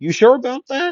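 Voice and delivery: high, loud, cocky taunting tone. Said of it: "And Midoriya would say".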